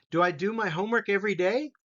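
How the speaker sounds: voice lifting upward on every day. Grammar drill turning statements into questions: rising at the end. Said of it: "listen to how my voice goes up".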